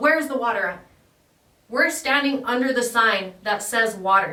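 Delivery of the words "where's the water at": mock-angry, imitated angry voice. Retelling a man who walked up already angry, imitating an angry customer. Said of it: "he walks up already angry and he's like".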